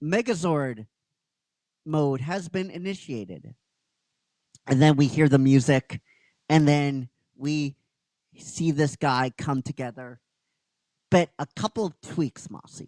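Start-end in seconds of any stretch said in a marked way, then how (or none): 0.0-3.5 machine-like electronic robot announcer voice. Speaker retelling what an electronic voice announced, electronic booming voice. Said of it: "this electronic booming voice goes".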